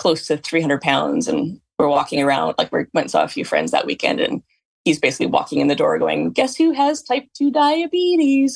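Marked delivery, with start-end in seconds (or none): 6.3-8.6 very high, excited, gleeful voice. Retelling the husband walking in the door: imitating an excited husband. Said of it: "he was all excited".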